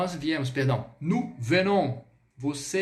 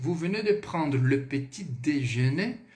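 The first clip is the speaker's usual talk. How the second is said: questioning rise in pitch on déjeuner; 3 semitones lower than usual. Teaching French intonation, saying the sentence with question intonation. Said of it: "Olha a entonação. Pergunta".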